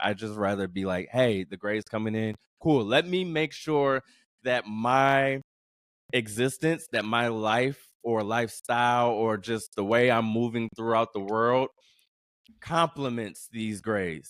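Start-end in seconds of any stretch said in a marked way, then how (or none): none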